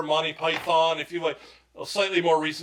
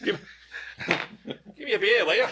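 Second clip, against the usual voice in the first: bad Irish accent that sounds Australian; 4 semitones higher than usual. Asked to do an irish accent, the speaker tries, failed irish accent sounding australian. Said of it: "That was Australian".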